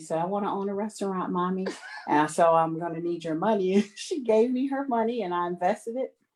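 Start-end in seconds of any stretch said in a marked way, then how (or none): 0.2-1.7 put-on small little-girl voice. Retelling asking her daughter whether she wants a TV or a restaurant: imitating Stasia's little voice. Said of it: "So in her little voice".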